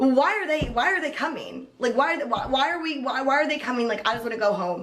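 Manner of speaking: high, worked-up angry rant. Telling how a man got mad about waiting in a parking lot, mock-angry retelling. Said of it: "He had the audacity to get mad".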